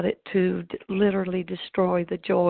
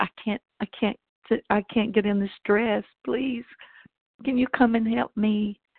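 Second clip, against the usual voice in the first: mock crying, tearful, repeated begging tone; 3 semitones higher than usual. Retelling a call to the maid of honor: retelling a tearful plea. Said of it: "called my maid of honor in tears and said".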